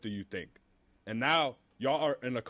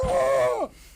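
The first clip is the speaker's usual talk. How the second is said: angry yelling, higher and louder; 10 semitones higher, 10 dB louder than usual. Showing how not to give criticism: angry outburst. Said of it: "don't have no anger. Just be like".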